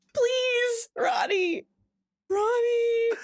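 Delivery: very high, fake begging tone. Voicing trousers that beg to be taken off: mock begging. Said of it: "Begging, begging to be taken off".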